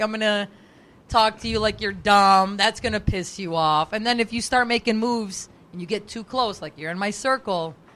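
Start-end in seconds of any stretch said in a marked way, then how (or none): none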